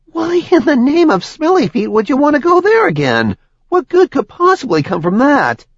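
very high, shrill, swooping incredulous spluttering. A demon is told to get them into Asmodea: sputtering in disbelief. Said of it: "The demon sputtered in disbelief".

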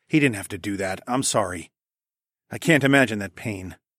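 ordinary delivery

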